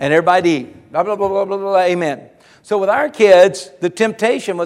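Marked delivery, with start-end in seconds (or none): 0.9-2.3 gabbled, rushed, rote rattling-off. Retelling how the family rushed the prayer before dinner: imitating praying very fast. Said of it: "how we would pray it so fast".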